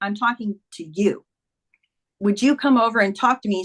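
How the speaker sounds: normal talking voice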